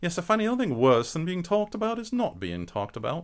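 put-on British accent. Asked by the others to show a British accent: put-on British accent. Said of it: "mine is".

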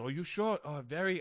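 put-on Indian accent. Retelling what a man asked them, Indian accent impression.

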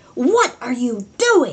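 put-on furious, demanding shout with swooping pitch. Retelling an angry woman confronting the new gardener: imitating someone yelling. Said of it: "like yelling at me".

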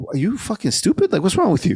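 exasperated, high-pitched, incredulous berating.

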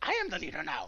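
alien creature voice. Describing a scene, quoting the young Silurian obsessed with leading, imitating the young Silurian leader. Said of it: "and he talks just like that".

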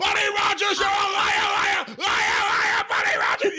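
mock, very high-pitched, repeated, taunting screaming cry. Acting out a man at two in the morning accusing Buddy Rogers, imitating a man screaming. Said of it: "He's screaming everyone's rollout".

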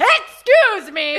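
mock shouting, calling out loudly. Recounting being ignored on the red carpet, retelling own shout. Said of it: "how did you shout?".

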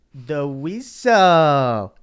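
booming, very loud, full-volume belted shout. Answering a request to do an impression: Pauly Shore impression. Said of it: "do an impression of Pauly Shore".

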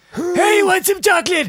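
very high, loud, belted cartoon voice. Showing how a character talks: Pa Grape voice. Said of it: "Pa Grape talks like this".

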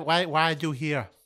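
acted speech as with numb tongue. Asking a creature in a game scene why it is here: acted numb-tongue speech. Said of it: "you're really unclear".

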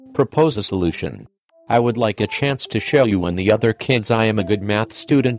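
ordinary delivery

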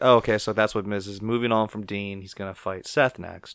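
plain

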